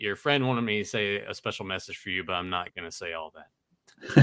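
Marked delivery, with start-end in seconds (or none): none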